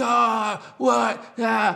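put-on high, loud, full-blown, frustrated child's yell.

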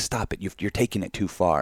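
acted, flustered, panicked alarm, freaking out. Retelling a TV talk show clip, imitating women freaking out. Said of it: "the fucking women on The View start freaking out".

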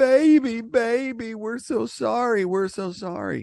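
tearful, very high crying voice, pleading. Retelling people running up to a hog trailer at a butcher shop: imitating people crying. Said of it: "they were running up to the trailer crying".

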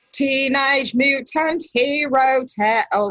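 poor attempted British accent. Joking about uk naming differences, bad british accent. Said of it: "I can't do a British accent".

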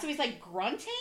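plain

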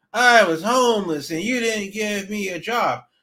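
nasal, whining surfer-style voice. Showing how Darby's accent makes him more infuriating, in a whiny, nasally Darby surfer-bum accent. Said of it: "this whiny, nasally, you know, surfer".

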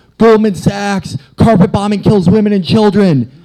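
very high-pitched, shrill, loud yelling rant. Recounting a Trump supporter's reply to Ted Cruz, retelling a man yelling. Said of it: "the guy is just yelling like".

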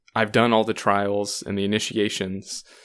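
usual speaking voice

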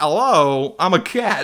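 proud, slow, deliberate movie-star voice. Retelling a film character's first appearance: Christopher Walken impression. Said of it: "with my great Christopher Walken impression".

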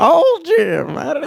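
mock, high, slow, drawn-out grumbling complaining voice.

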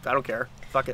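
ordinary delivery

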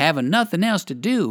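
plain

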